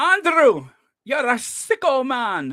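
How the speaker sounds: put-on Scottish accent. Quoting a man in Scotland addressing Andrew, imitating a Scottish accent. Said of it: "that's how he said it".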